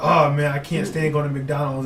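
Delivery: ordinary delivery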